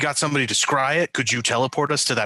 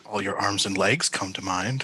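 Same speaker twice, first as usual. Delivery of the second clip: low mutter under the breath; 4 semitones lower, 4 dB quieter than usual. Muttering an aside while payment is discussed: muttered under breath. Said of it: "I say under my breath".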